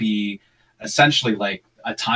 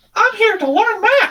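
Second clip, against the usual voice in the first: squeaked out, high-pitched and loud; 6 dB louder than usual. Quoting the temporary robot voice put in for the kid, bad Mickey Mouse impression. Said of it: "it sounds like this ridiculous Mickey Mouse attempt".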